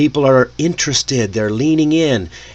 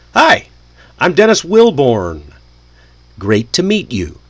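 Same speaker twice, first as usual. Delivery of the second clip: slow, clear words followed by a pause. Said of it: "say your name slowly and clearly".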